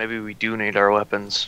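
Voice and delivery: very solemn, serious, hushed half-whisper. A player speaks in character as the group approaches, in a serious half-whisper. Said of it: "in a very serious voice, I'm gonna whisper".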